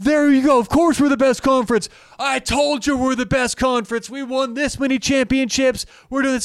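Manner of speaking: very high-pitched, boastful yelling. Imitating boastful fans of a college football conference: imitating fans yelling. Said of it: "who are you yelling at?".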